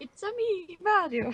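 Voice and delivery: very high drawn-out character voice. Joking about a stunt driver who looks like Mario: Mario voice. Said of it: "the Mario-looking driver".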